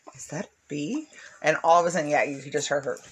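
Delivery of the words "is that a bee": hushed, soft, quiet little voice. Retelling how someone quietly asked about a bee: imitating someone speaking quietly. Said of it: "he said it so quietly".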